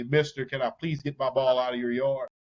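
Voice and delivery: mock shouting, as if upward. Describing a mean neighbor, a kid asks for his ball back; retelling a yell up. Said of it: "You'd have to yell up to him".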